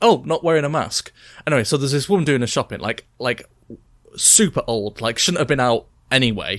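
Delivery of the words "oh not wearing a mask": snide, needling, pointed passive-aggressive little aside. Showing how she reacts to people not wearing masks, acting passive-aggressive. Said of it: "I just do it in a passive aggressive way".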